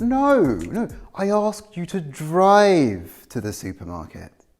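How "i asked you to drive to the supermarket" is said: contrastive stress on drive. Retelling a call to a friend who walked instead: stress on drive. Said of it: "I'm contrasting drive with walk".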